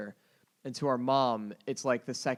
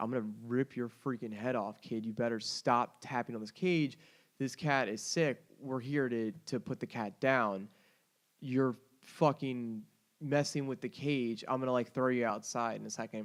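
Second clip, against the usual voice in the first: ordinary delivery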